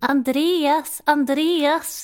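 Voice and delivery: failed put-on Jönköping accent. Retelling how a studio guest called out a man's name: attempted Jönköping accent. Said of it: "så pratar man inte. Hon är från Jönköping".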